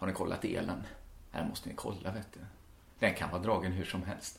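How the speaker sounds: low, quiet, hushed voice.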